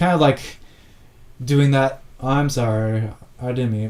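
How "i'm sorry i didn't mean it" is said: insincere, drawn-out, sarcasm laid on thick. Retelling an apology from the one who made the threat: imitating a sarcastic apology. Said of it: "Very sarcastically".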